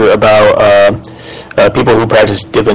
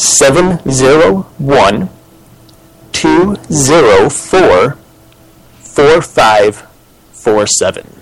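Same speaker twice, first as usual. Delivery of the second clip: slightly slower delivery; 3 semitones higher than usual. Host repeating the call-in number for listeners, saying it a little slower. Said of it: "I'm going to say it a little slower".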